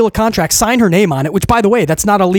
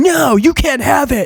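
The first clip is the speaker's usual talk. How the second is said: mock high screaming, drawn out and held long; 6 semitones higher than usual. Retelling a wrestler refusing to return a contract: imitating Rhea Ripley screaming. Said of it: "Rhea is screaming".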